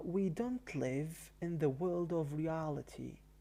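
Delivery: normal talking voice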